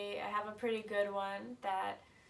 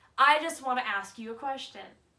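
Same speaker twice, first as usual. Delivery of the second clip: very loud, hostile, aggressive shout; 4 semitones higher, 8 dB louder than usual. Retelling how a stranger in a parking lot chased them: imitating an angry yell. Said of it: "angrily, aggressively walks after us and yells".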